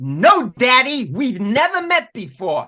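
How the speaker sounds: big, swooping, high-pitched bellowing. Retelling the answer she gave with her back to the audience, in a bellowing voice. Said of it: "in a large, bellowing voice".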